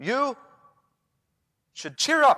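forceful, insistent, very loud delivery. Demonstrating a tone thought to be medicinal: forceful, insistent tone. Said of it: "I'll say it forcefully".

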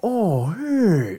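loose, mellow, a bit high. Retelling a cartoon scene, relaxed, mellow Scary Terry voice. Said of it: "really relax, really just mellow".

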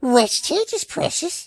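put-on creature voice. Friends urge a speaker to do a Smeagol; he performs: Smeagol voice. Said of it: "do Smeagol".

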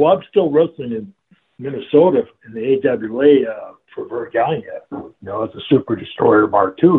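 usual speaking voice

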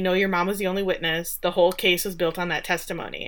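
ordinary talk

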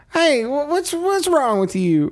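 very high, squeaky, stammering, stumbling voice. Retelling a film scene at the zoo, doing a Noah impression. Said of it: "I will always do a Noah impression".

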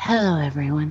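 put-on announcer-style radio-host voice. Echoing the other speaker's welcome to mock it: imitating an NPR-style voice. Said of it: "that voice is".

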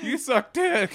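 very high, tearful, voice breaking fake sob. Acting out a comeback in a joking back-and-forth: fake crying with voice cracking. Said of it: "Voice cracking".

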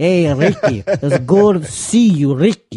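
heavy put-on Italian accent, slow. Describing a longtime old client who calls him Ricky, imitating thick Italian accent. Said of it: "Thick Italian accent".

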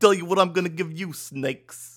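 put-on New York accent. Asking another host if they liked the impression, then doing a New Yorker impression. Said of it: "my New Yorker impression".

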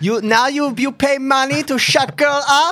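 deliberately bad, very high, slow drawl. Joking about Melania's reaction to the payments: bad Melania Trump impression. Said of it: "a really bad Melania impression".

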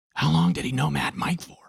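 high stage whisper. Narrator reads the storyteller asking a question in a camper, whispered. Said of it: "I whispered".

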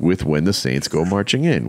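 ordinary delivery

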